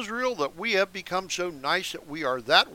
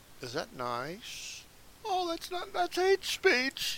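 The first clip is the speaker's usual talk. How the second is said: mock-offended, much higher and quieter; 8 semitones higher, 10 dB quieter than usual. After quoting scripture, the speaker mocks imagined objectors, in a mocking voice. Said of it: "I'm mocking".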